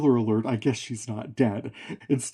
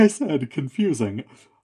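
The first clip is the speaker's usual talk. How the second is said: ordinary delivery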